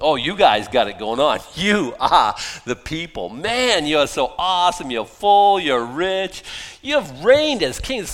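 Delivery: loud, swooping, sarcastic tone. Explaining a quoted passage to listeners, retelling the sarcastic words. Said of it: "It's sarcasm".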